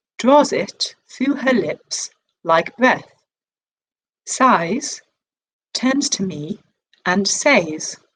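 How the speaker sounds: slow, neutral accent with Yorkshire accent dropped. Reading the last lines of a poem aloud: not own Yorkshire accent. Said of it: "read it like someone else's voice".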